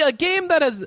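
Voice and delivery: high, loud, bad Italian accent. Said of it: "my Italian accent is horrible".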